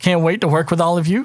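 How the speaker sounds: rough, cocky, high-pitched recruit voice, tossed off. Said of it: "He goes".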